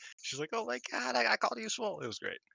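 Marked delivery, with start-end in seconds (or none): 0.5-2.0 mock giddy, very high squeal of delight. Retelling someone's reaction to being praised, imitating giddy excitement. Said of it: "and May Sarah was like giddy".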